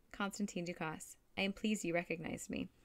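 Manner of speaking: usual speaking voice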